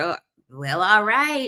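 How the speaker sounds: reluctant, grudging tone laced with sarcasm. Retelling a reply to being told they'd take an Uber: imitating a sarcastic reply. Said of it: "Sarcastically saying "okay" all the time".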